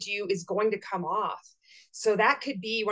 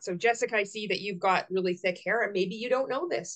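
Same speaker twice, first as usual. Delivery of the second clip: usual speaking voice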